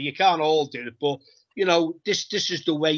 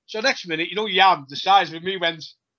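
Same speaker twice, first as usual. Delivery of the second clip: ordinary talk, nothing marked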